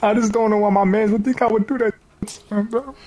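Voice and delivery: fake sobbing. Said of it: "Stop crying, cuz".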